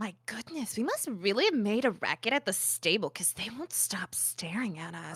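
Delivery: hushed, quiet half-whisper, aside. Playing a character who leans toward Baron to half-whisper: half-whispering in character. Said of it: "I lean a little bit to Baron to whisper".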